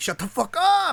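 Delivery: put-on sudden yelled outburst, very high and shrill. Retelling how he would suddenly yell: imitating someone yelling. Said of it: "he would yell".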